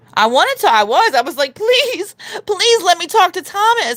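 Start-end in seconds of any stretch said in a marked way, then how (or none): 1.5-3.9 very high, begging, pleading voice. Retelling own begging in a comment section: mock pleading. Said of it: "I was begging in the comment section".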